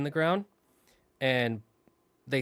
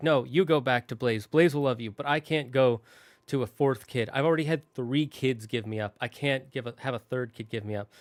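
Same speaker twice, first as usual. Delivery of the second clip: ordinary talk, nothing marked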